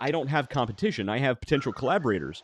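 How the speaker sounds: plain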